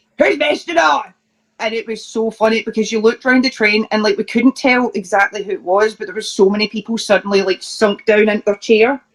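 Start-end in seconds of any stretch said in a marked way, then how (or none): 0.2-1.1 put-on furious, pitched-up shouting in a Scottish accent. Telling about a man who got up on a train, imitating an angry Scottish shout. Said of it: "just like really angry".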